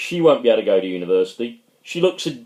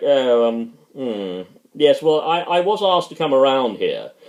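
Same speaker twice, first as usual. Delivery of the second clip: ordinary talk, nothing marked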